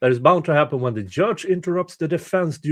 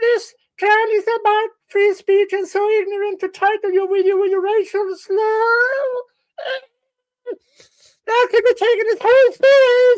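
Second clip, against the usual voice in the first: shrill, very high, loud fake voice, drawn-out slur; 5 dB louder than usual. Imitating the photo guy who is back; put-on higher-pitch voice. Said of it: "I need a higher pitch voice".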